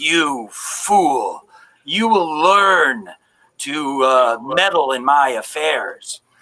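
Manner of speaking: slow, eerie, inhuman, unearthly otherworldly voice. An old woman, before her visage disappears, warns someone in an otherworldly voice from beyond her skull. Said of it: "in like this voice that seems to come from beyond her skull".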